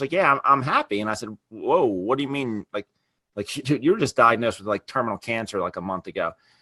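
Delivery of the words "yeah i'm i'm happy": put-on cheerful, excited, upbeat voice. Speaker retells his mother's reply on the phone, imitating her upbeat voice. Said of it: "she was really upbeat".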